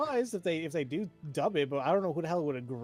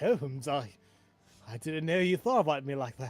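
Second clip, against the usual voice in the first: put-on flustered voice. Joking that Watson is blushing, voicing Watson: flustered Watson voice. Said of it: "I see Watson blushing a little bit".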